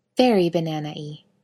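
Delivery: ordinary delivery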